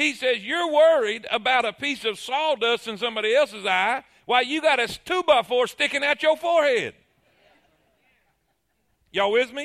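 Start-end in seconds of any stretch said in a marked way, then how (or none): 0.4-6.9 dry, sarcastic, mocking tone. Retelling how a rebuke is said to the crowd: imitating a sarcastic jab. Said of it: "Jesus could not utilize sarcasm".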